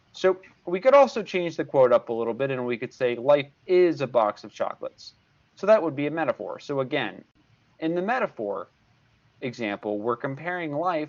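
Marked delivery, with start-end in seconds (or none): none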